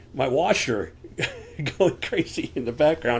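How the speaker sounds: laughing through the words. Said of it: "I'm laughing because".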